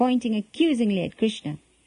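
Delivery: ordinary delivery, nothing marked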